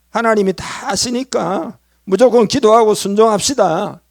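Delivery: forceful, high, loud, pushy urging tone.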